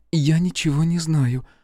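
trembling, quavering, shaky voice. A woman questioned about the deceased answers, in a trembling voice. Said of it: "дрожащим голосом проговорила".

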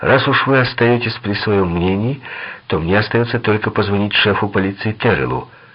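plain reading voice

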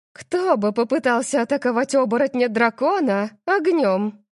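offhand, scoffing, scornful, dismissive tone. Reading a novel, the narrator voices a woman's reply to a question, dismissive. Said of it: "пренебрежительно ответила Нова".

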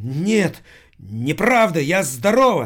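sudden, cried-out yelping outburst. A model answers a man aiming a pistol at her: shrieking. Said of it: "взвизгнула Эрика".

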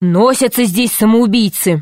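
cross, irritated, angry. Narrator reading the savage scolding Pashka after the explosion: angry. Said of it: "дикарь поднялся на ноги и сердито сказал".

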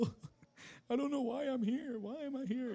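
mock crying, very high, tearful and lost. Recalling standing in the living room as a teenager with no memories: retelling own crying. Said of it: "i was just crying".

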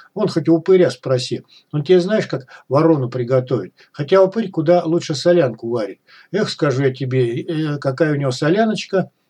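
ordinary talk

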